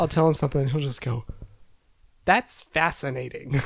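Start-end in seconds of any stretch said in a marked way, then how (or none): 2.3-3.5 put-on sarcastic child tone. Parent imitates his son's stock reply to everything: mock-sarcastic kid imitation. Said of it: "Like he's just being super sarcastic".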